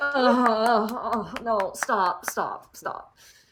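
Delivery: very slow, drawn-out, frantic, panicked pleading. Voicing Starlight reacting to the prisoners clapping: Starlight panicked pleading. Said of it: "Starlight is like".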